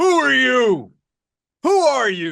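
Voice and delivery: big, booming, swooping voice. Retelling what a man said when he came over: big booming voice. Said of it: "with his big booming voice".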